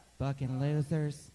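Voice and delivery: slow, deep-voiced impression.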